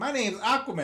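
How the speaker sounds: put-on sweet, high, small child's voice. Recalling a little kid introducing himself to her, imitating a little kid. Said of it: "some little kid came up to me and was like".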